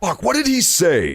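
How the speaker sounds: ordinary talk, nothing marked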